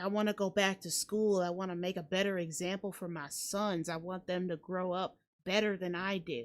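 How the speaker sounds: ordinary talk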